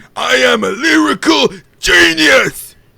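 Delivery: shrill, very loud, creaky shout, very high and rough. Someone has asked to hear your impression and you needed a prompt; do a Cyrax impression. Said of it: "Cyrax impression".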